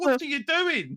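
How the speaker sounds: very high, screamed yell. Retelling watching characters make stupid choices: imitating own screaming at the screen. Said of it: "screaming at the screen going".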